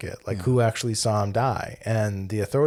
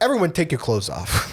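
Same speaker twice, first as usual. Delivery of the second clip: put-on tough-guy voice, a touch higher pitched; 7 semitones higher than usual. Retelling a film scene, imitating Marty as a tough guy. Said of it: "kind of having this tough guy persona".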